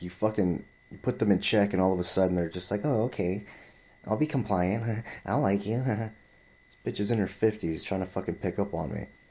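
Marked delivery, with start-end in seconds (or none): 2.8-5.8 put-on, giggly, chummy, compliant sweetness. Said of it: "getting all, like, chummy chummy".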